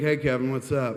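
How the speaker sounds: ordinary delivery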